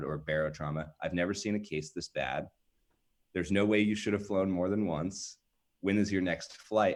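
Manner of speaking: normal talking voice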